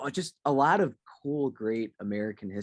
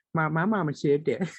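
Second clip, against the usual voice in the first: high put-on Southern Louisiana country accent; 5 semitones higher, 3 dB louder than usual. Joking about Alabama, imitating a movie character: Bobby Boucher voice. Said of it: "I was thinking of, like, Bobby Boucher".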